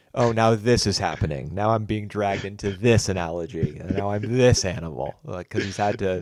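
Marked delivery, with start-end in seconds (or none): 0.2-5.2 put-on weary, put-upon, fed-up exasperation. Imitating a film character reacting to being called an animal: imitating exasperation. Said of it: "that kind of exasperated".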